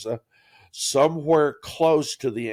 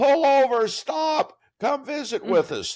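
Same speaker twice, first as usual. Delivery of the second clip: mock very high call, shouted and hollered; 13 semitones higher, 3 dB louder than usual. Retelling people waving from the street as we drove past, imitating their hollering. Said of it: "And they're hollering".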